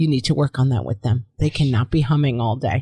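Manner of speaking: put-on very serious voice. Reading out a listener's story about a first grade teacher: imitating a very serious voice. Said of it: "she said in a very serious voice".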